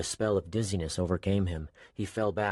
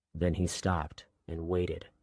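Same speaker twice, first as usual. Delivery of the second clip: ordinary delivery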